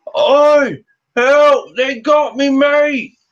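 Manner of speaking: high, drawn-out cry carried from afar. Voicing a guard who calls from the edge of town: guard calling out for help. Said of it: "you hear a guard call from the edge of town".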